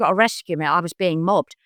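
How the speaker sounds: ordinary delivery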